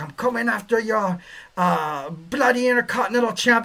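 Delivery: clumsy, bad put-on Scottish accent. Imitating a wrestler turning on a partner: bad Scottish accent. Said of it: "I can't do a Scottish accent".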